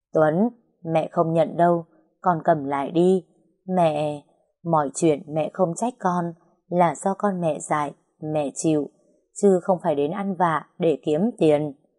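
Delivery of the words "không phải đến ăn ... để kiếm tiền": plain reading voice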